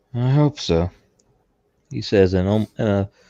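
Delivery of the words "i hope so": defeated, resigned, ambivalent tone, higher pitch. Answering in character after being told he is on history's correct side: defeated and ambivalent tone. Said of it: "a mixture of defeated and an ambivalent tone".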